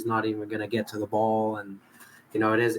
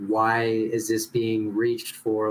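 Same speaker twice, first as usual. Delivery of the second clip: plain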